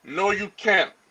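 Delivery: normal talking voice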